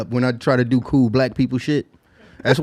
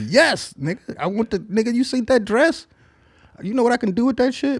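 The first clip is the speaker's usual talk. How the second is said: mock fervent, eager, passionate gush, very high pitch; 9 semitones higher than usual. Acting out how the woman should have answered: acting out a passionate reply. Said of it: "Passionate, like, passionately".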